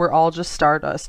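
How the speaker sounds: usual speaking voice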